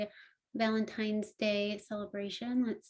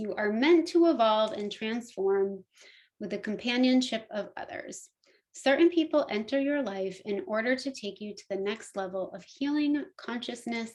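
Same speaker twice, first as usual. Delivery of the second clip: ordinary delivery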